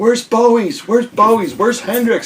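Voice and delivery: very high, desperate, frantic screaming. Retelling a record store event where shoppers searched frantically: imitating people screaming. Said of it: "there were people screaming".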